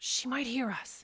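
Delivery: speaking in a whisper. Fearing a woman might overhear, a character speaks to another, whispering. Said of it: "why are we whispering?".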